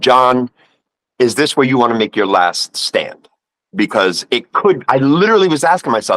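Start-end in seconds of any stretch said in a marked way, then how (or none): none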